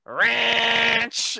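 very loud, very high, drawn-out stretched yell. Retelling how a friend yelled out the car window: imitating someone yelling. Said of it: "He just rolled the window down and yelled out".

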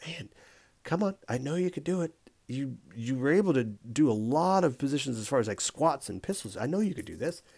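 full, hushed half-whisper. Retelling how she urged them on in class: imitating a half-whisper. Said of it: "she whispers at me".

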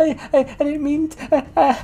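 put-on high, stammering, nervous young voice.

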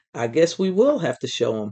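ordinary delivery, nothing marked

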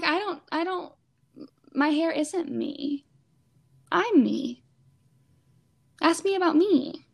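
voice welling up with emotion, high and slow. Telling another speaker how it felt to cut off long hair, getting emotional. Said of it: "I'm gonna get emotional. I'm sorry".

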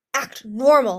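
loud, barked delivery. One character digs claws into another's shoulder and orders her, barked order. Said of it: "Listener barked".

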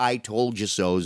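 ordinary talk

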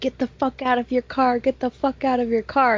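contained, mild yell, repeated. Retelling a man who parked and got out of his car, retelling a scream. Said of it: "he starts screaming".

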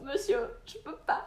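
play-acted high crying, barely getting words out. Recounting arriving in tears after a panic attack and speaking to a man: acting out her past crying. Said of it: "je pleurais".

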